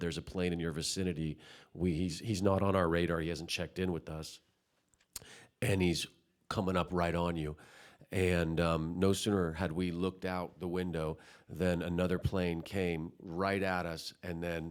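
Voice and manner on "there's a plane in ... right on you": plain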